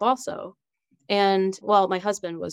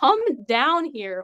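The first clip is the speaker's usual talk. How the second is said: high, loud, screamed voice; 6 semitones higher than usual. Recounting calling him down while starting to push in labour, retelling a scream. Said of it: "I just screamed like".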